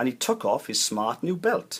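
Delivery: ordinary delivery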